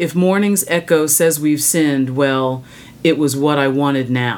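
ordinary talk

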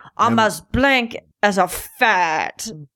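bad, weak, unconvincing attempt at a French accent. Asked how a French-Canadian character would say it, speaker tries a bad French accent. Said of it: "How would you say that with a French?".

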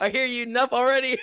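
very high, fast, laughing mock whine.

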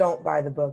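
ordinary talk, nothing marked

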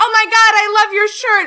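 put-on, very high, very loud, squealing, excited gushing. Retelling what a young girl at Pride said about the shirt: imitating a very excited girl. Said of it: "very, very excited".

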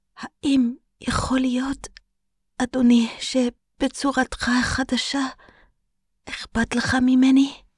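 trembling, shaky, quavering voice. Narrator reads a follower's question to the Dark Lord, in a trembling voice. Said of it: "בקול רועד".

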